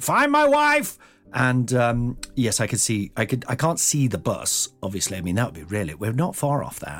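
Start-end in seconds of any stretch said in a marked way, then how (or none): 0.0-1.0 acted, very high, shrill, loud screaming. Retelling screaming at the phone to find a spouse: retelling a scream at the phone. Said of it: "I screamed to the phone".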